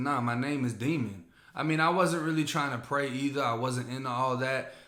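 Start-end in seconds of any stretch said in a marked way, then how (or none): none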